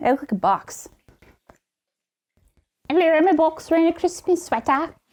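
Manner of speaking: slight put-on British accent. Chatting about a sweater's fit, the speaker answers in a little British accent. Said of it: "is that your little British accent?".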